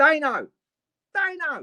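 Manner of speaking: very high-pitched Cockney accent. Trying out how to pronounce a name: Cockney accent. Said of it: "it's a good way to say it in a in a Cockney accent".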